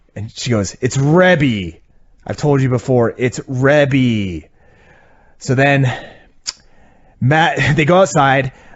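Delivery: ordinary talk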